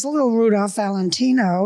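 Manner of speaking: ordinary talk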